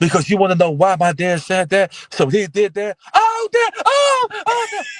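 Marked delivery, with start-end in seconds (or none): 3.1-4.9 very high, slow, drawn-out fake cries of pain. Retelling pretending to be hit by a belt: retelling a fake scream of pain. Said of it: "I want you to scream like I'm hitting you".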